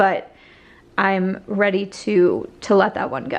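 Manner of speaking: slow, choked-up voice catching with emotion. Speaker decluttering makeup palettes, ready to let one go, choking up. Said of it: "it sounds like I am choking up".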